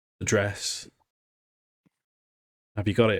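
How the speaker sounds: very nervous, anxious, on edge. Voicing a survivor who asks the listeners a question, very nervous. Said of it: "he'll say to you very nervously".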